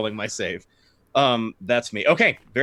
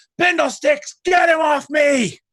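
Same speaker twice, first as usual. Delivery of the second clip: screaming, much higher and louder; 4 dB louder than usual. A storyteller voices a swordsman just bitten on the arm, screaming out. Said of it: "he screams out".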